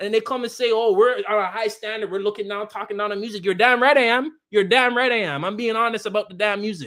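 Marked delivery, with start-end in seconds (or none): none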